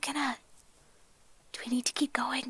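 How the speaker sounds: quiet whispering. Asking a companion in character, while sneaking, whether to keep going: whispering. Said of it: "I'm gonna whisper".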